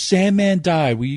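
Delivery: play-acted high, loud sobbing, crying through tears. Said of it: "And he's crying".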